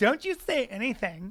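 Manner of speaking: put-on slow, drawn-out teenage girl voice. Joking that both speakers act like a couple of teenagers: imitating teenagers. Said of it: "we're like a couple of teenagers".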